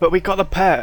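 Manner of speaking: slightly excited, lifted voice.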